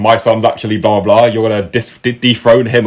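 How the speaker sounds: ordinary talk, nothing marked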